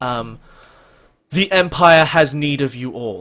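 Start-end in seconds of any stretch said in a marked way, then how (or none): 1.3-3.2 resounding, booming, loud voice. Narrator voices a presence speaking into all the characters' minds: booming voice. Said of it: "this booming voice goes through all of your minds".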